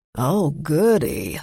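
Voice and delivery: dry, unimpressed sarcasm with zero enthusiasm. The manager replies to the narrator's hope for more bridal parties: flat sarcastic voice. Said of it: "she said with a flat voice".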